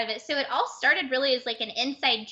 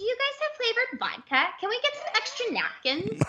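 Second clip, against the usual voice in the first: put-on very high, rising-falling sing-song Valley girl voice; 10 semitones higher than usual. Imitating restaurant customers asking for things: imitating a valley girl's musical rising-falling tone. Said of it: "they would go up and then go down like this".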